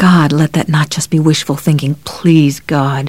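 ordinary delivery

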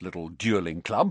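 ordinary delivery

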